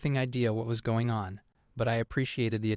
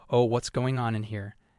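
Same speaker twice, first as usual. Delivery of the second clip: imitated excitement. Retelling the boss coming in and seeing the charts: imitating someone excited. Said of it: "gets all excited and goes".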